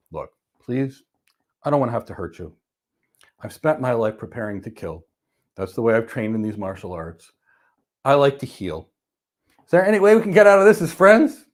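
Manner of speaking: put-on very calm, gentle tone. Recounting what was said to an aggressive man, retelling speaking very calmly. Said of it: "in a very calm way".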